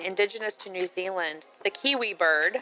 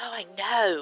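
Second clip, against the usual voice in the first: put-on, heavily stressed "i know". Retelling how a woman said it, imitating her stressed 'i know'. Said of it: "it was like".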